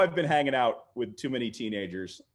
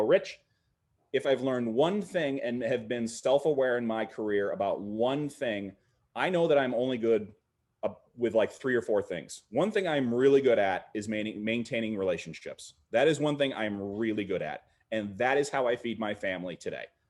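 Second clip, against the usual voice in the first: normal talking voice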